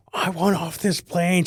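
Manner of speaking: demanding yell, high-pitched and drawn out. Telling a story about a friend yelling on a delayed plane. imitating someone yelling. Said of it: "she's just like yelling".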